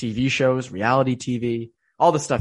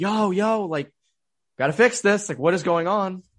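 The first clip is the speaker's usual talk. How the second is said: high, urgent, acted-out yelling; 7 semitones higher than usual. Retelling a bathroom flood, the speaker re-enacts yelling for a roommate. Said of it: "I'm yelling for my roommate".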